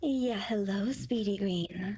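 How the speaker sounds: wholesome mother voice, very deep and low. Greeting the viewer who redeemed it: wholesome mommy voice. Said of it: "Speedy Green redeemed, um, the wholesome mommy voice".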